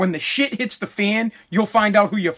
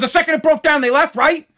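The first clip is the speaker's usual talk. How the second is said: angry, pissed-off, pitched-up scolding rant; 7 semitones higher, 3 dB louder than usual. Recalling a man's reaction after friends left the broken-down car, retelling his angry words. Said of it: "he was pissed".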